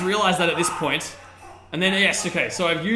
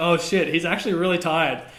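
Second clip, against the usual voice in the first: ordinary talk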